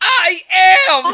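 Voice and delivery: very high-pitched, very loud, shrill shout. Recounting a video of her gaming under pressure, retelling her shouted reply. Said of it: "she just shouts back".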